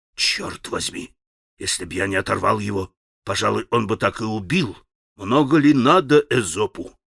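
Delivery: in a whisper. A man speaking aside to a companion after a fight, whispering. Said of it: "прошептал Иван Федорович Алеше".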